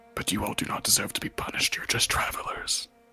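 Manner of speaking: soft, barely voiced whispered character voice. Speaking as the overseer to the travelers; whispering. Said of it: "because I'm whispering".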